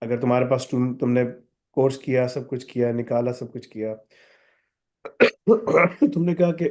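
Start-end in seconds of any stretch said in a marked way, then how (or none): 6.1-6.7 coughing through a sore throat. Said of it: "मेरा गला खराब है".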